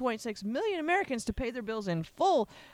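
ordinary delivery

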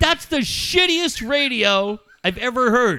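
acted-out yell. Recounting to a friend how he laid into someone, retelling a yell. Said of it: "you yelled at both of them".

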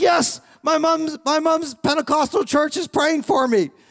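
put-on shouting. Retelling a man yelling his answer back during a shouted exchange, retelling a yell. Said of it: "we're yelling this information back and forth".

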